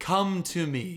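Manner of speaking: play-acted, desperate, begging pleading voice. Acting out wisdom calling people to follow: imitating someone begging. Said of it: "it's begging, like, on its hands and knees".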